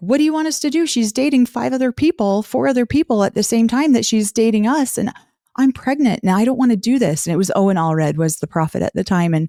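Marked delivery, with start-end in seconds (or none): 0.0-7.3 heated, distressed, upset yell, pitched high. Retelling what she yelled at the prophet on stage, reenacting a yell. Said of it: "I yelled at him on the stage".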